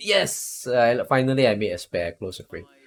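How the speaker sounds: normal talking voice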